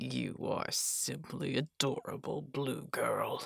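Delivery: soft, creaky, rough, chilling menacing rasp. Narrator reads Jero speaking to Blue Girl, rasping. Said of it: "Jero rasped".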